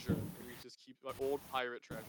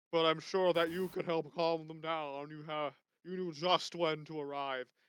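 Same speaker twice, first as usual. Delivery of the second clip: loud, hearty, puffed-up blowhard voice; 4 semitones higher, 7 dB louder than usual. A game master voices a man welcoming a new pastor to town, hearty, loud blowhard voice. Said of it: "very hearty, kind of like a blowhard, very loud".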